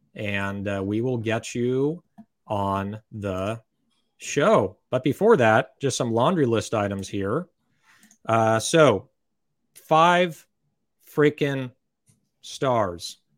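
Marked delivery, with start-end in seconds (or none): 9.9-13.2 slow, deliberate, weighty, each word drawn out. Asking listeners for five-star ratings on Apple Podcasts: said slowly. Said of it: "Saying that slow 'cause it's so important".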